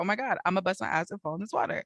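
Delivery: put-on fearful voice. Retelling a boat trip, acting out being fearful. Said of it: "there were like fearful moments".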